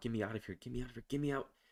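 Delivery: frantic, repeated pleading with rising panic. Narrator reads a chained prisoner begging to be let out, panicked and getting louder. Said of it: "His voice is getting louder as his panic builds".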